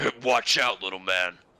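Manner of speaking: large dragon-creature man character voice. Voicing a large dragonborn man who a player bumps into: large dragonborn man voice. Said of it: "you see a large dragonborn man looking down at you and say".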